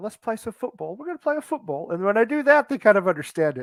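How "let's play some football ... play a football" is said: light put-on English accent. Retelling what is said to kids about football: put-on english accent. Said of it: "I even put on a little English accent".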